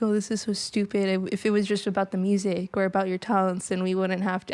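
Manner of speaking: snide, dismissive internet troll voice. Imitating internet trolls who comment on the episode: imitating an internet troll. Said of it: "I don't know why I'm making this voice".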